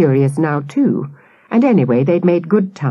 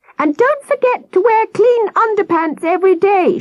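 shrill, very high, fussing, nagging shout. Narrator reads a woman calling after the Cubs piling onto the bus, shouting.

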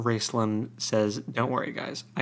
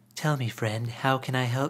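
unsettling, creepy, silky, charming sweet talk. Describing how a book character speaks to Raistlin's new friends: put-on creepy, charming voice. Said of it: "really creepy, charming".

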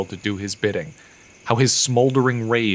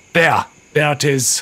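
growled delivery; 4 semitones higher, 4 dB louder than usual. Reading a story: a young man points at his master and growls. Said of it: "Keegan growled".

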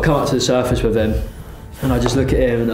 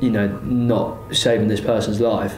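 normal talking voice

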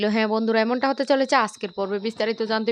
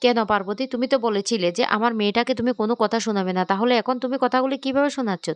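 ordinary delivery

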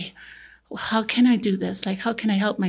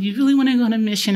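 put-on crying speech, louder; 2 semitones higher, 5 dB louder than usual. Speaker retells what a man said when he opened it, imitating someone crying. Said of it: "he was like crying and saying".

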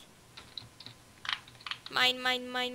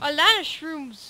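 ordinary delivery

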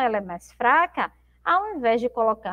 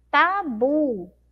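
tabu with bu stressed strongly and drawn out. Teaching the strongest syllable in tabu: stressed, lengthened 'bu'. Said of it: "a sílaba bu é a sílaba mais forte, demoramos mais um pouquinho".

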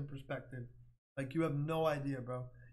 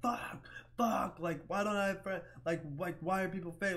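anguished, raging outcry, held in and muffled; 4 semitones higher than usual. Retelling punching the wall and freaking out: imitating own screaming.

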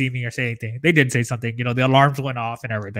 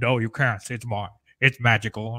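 put-on storybook character voice. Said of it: "that's how he talks".

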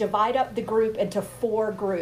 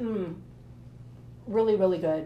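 speaking with mouth full, slower; 2 semitones lower, 5 dB quieter than usual. Tasting the food on camera, talking with mouth full. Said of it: "when I eat with my mouth full on camera".

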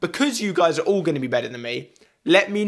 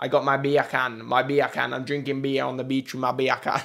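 fast fake Jamaican accent, accents merging together; 3 semitones lower, 4 dB quieter than usual. Speaker trying out a list of accents, lastly Jamaican: fake Jamaican accent. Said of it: "we have got Jamaican".

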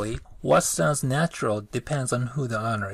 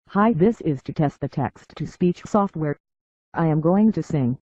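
robotic machine voice, higher and louder; 4 semitones higher, 6 dB louder than usual. Demonstrating how text-to-speech software sounds, machine voice. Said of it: "A machine voice like this".

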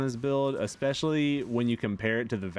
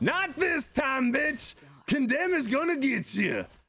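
loud, very high, drawn-out yelling outburst. Gamer calling out a play mid-match: loud outburst. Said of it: "Sorry, I got a little loud".

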